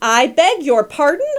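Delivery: cold, sharp snap. The narrator answers the squirrel's cheeky remark with a frosty snap. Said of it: "I snapped frostily".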